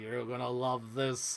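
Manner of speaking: possessed, demonic devil voice. Retelling a movie scene where the devil speaks through an old lady, devil voice. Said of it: "the devil voice comes through her and is like".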